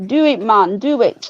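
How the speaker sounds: put-on slow, heavy, played-up Jamaican accent. Passing on a message from Mister Underbelly to someone, in a put-on Jamaican voice. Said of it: "his most Jamaican of voices".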